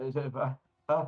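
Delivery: halting, loud, slow stuttering "uh-uh". Voicing a figure who faces the intimidator, stuttering in character. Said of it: "he starts stuttering".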